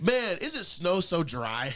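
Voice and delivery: drawn out slowly in a dry tone.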